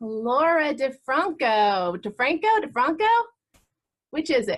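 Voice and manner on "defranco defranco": mock Italian accent, higher pitched. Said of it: "It's Italian accent".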